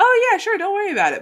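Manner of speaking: very high, sugary, oversweetened customer-service voice. Showing how they talk to customers they like: oversweetened customer service voice. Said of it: "I will probably oversweeten things a little bit".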